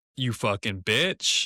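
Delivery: mock angry officer voice, outburst. Imagining what the officer said after jumping back: imitating a pissed-off officer. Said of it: "it looked like he was pissed".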